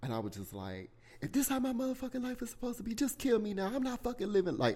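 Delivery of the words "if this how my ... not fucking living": anguished, desperate scream, very high-pitched. Retelling what he screamed to god back then, retelling screaming at god. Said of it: "I was screaming to God".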